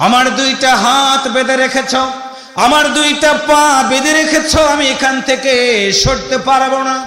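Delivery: impassioned cry, high and loud.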